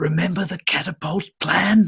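secretive, half-whispered aside. In a game scene, patting another character on the shoulder, half-whispering. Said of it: "I whisper to him".

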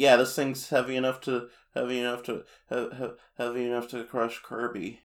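stammering, strained, squeezed voice as if being crushed. Retelling a show scene where Blocky falls on him: King Dedede being crushed to death. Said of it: "That's what he sounds like when he's being crushed to death".

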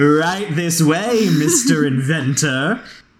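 showy, sarcastic, slow and grand theatrical guard voice. Voicing a guard who opens a trash can: mock-grand guard voice. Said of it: "she dramatically flourishes and opens the top".

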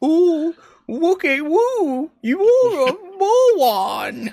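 tiny, very high, slow, drawn-out bean voice. Showing how they'd talk to a fascist about their idiocy; small bean voice. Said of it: "I'd like to use the small bean voice".

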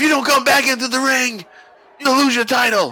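stern, authoritative, strict referee voice.

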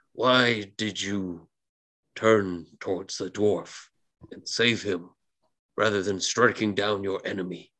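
eerie, spooky, otherworldly ghost voice. A narrator voices a swordsman's spectral form questioning the listener, spooky spectral voice. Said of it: "it asks you in its spooky spectral voice".

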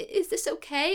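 acted gentle, upset voice. Recapping a TV episode, the speaker acts out a woman beside her unconscious loved one: imitating a gentle, upset question. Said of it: "touches his hand and like very gently and obviously very upset".

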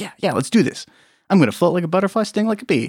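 acted puppy-like excitement. Acting out a character eager to spar at kickboxing: excited Trevette voice. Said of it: "He's just, like, like a puppy. He's, like, excited".

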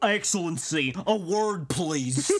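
goofy put-on voice. Quoting a book scene where Leon pulls someone aside: goofy Leon voice. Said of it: "the voice of Leon in this is just so goofy".

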